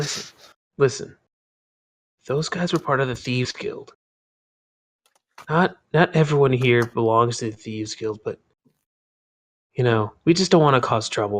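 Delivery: hushed stage whisper. People in the tent talk to the newcomer about the thieves guild, hushed. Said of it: "in hushed voices".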